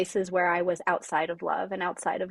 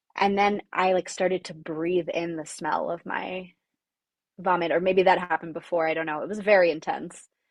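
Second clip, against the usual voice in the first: ordinary delivery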